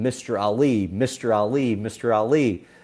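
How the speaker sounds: repeated call, scream only hinted, kept small. Retelling calling out to someone on a red carpet, retelling screaming a name. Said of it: "I just start screaming".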